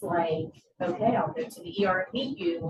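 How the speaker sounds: ordinary delivery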